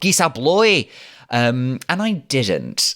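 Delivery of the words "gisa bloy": put-on loud, very thick, broad Glaswegian accent. Retelling what a man in a shopping centre said, in a very thick glaswegian accent. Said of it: "said in a very thick Glaswegian accent".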